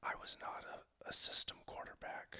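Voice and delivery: very hushed, close whisper. Acting out a quarterback whispering to his old coach while shaking hands: imitating someone whispering. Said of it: "he whispers in his ear".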